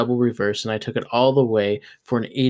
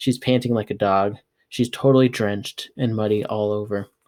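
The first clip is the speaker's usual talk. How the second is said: plain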